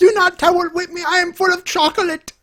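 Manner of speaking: put-on very high-pitched child voice with German accent. Cutting to a cartoon character on a podcast: German kid from The Simpsons voice. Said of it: "now we cut to the German kid from The Simpsons".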